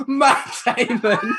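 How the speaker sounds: a whole crowd screaming, high-pitched. Recalling how a whole chorus of people joined in, retelling people screaming. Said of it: "A whole chorus of people just start screaming".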